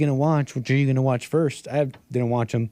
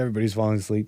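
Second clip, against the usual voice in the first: plain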